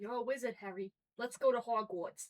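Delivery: put-on low-pitched, deep, slow Boston accent. Quoting Hagrid telling Harry he is a wizard: Hagrid voice in Boston accent. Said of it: "Not Brooklyn, not Brooklyn".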